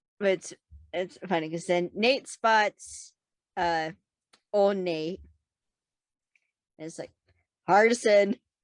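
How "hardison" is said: loud, stern dad voice calling out. Retelling a show scene where Nate calls out for Hardison: imitating a dad voice. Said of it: "Immediate dad voice".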